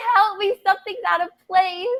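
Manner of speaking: high, put-on sobbing, screaming tearful cry. Retelling being hurt on the floor before paramedics: imitating own crying and screaming. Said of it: "I'm crying and screaming".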